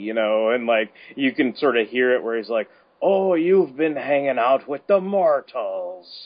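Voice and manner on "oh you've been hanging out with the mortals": slow delivery with pitch swinging up and down. Imitating how a character with a little lilt remarks to someone about their time among mortals. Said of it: "he does kind of have a little lilt in his voice".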